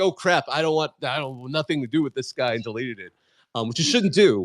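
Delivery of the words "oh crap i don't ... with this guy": plain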